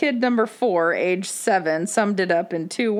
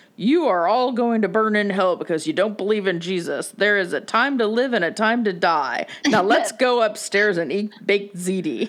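preachy pastor sermon voice, pulpit style. Retelling what her third kid said, imitating the pastor. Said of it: "imitating the pastor".

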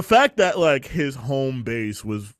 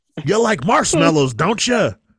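loud, high, coaxing, tempting villain voice; 8 semitones higher, 5 dB louder than usual. Teasing another speaker about marshmallows: Willem Dafoe impression. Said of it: "that was my impression of".

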